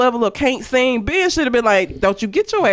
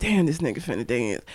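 put-on mutter under breath, much quieter, lower; 8 semitones lower, 9 dB quieter than usual. Picturing her husband dancing awkwardly, she acts out her reaction muttered under breath. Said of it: "I would probably be like that under my breath".

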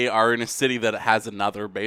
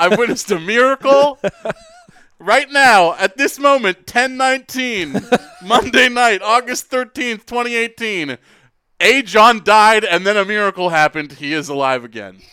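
mock play-by-play sports announcer voice, higher; 11 semitones higher, 8 dB louder than usual. One speaker continuing a joke among several speakers, as a mock sports announcer. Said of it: "like you were calling a game".

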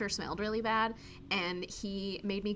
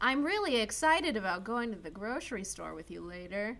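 ordinary delivery

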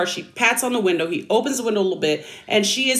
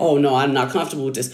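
low, fast, mocking, prissy and dismissive. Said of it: "And you said to her".

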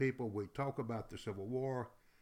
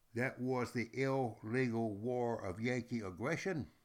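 ordinary talk

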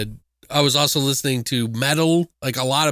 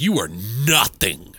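put-on dark cutting tone, lower; 4 semitones lower than usual. Retelling a movie scene where a character gets dark: imitating her getting really dark. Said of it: "She gets really dark there".

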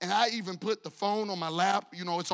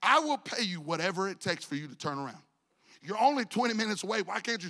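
normal talking voice

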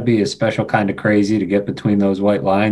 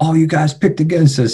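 mock high-pitched scream; 7 semitones higher than usual. Recalling a player running past the locker room into the cameras: retelling a scream. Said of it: "came running by and screaming".

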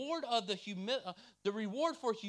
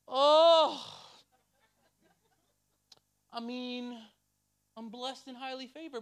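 loud, drawn-out, sanctimonious fake humility; 3 semitones higher, 7 dB louder than usual. Imitating people who show false humility when asked about their day: imitating a falsely humble person. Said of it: "you know those people that are like".

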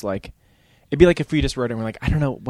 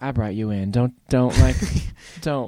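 put-on soft pretty voice. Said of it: "[name] has just got, like, a pretty voice".

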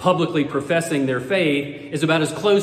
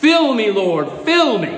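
eager, enthusiastic, high-pitched yelling; 6 semitones higher, 4 dB louder than usual. Retelling a joke about a man running down a church aisle: imitating a man yelling.

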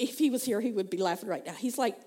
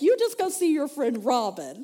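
loud, awkward, uneasy, uncomfortable voice; 4 semitones higher, 6 dB louder than usual. Retelling a husband's reaction to crying: imitating an uncomfortable husband. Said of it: "uncomfortable with this emotional outburst".

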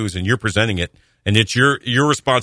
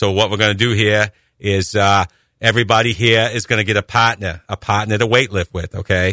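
put-on thick New England accent; 2 semitones lower than usual. Imitating a weightlifting class instructor, a former hockey player, with a thick New England accent. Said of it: "He had a thick New England accent".

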